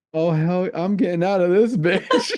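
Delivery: cartoon dog character voice. Retelling a movie scene, voicing the dog stuck in the flooding shower. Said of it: "and he's like".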